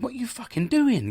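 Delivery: acted, defensive telling-off, pitched very high. Retelling confronting boys spraying graffiti: retelling a defensive outburst. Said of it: "I went a bit defensive".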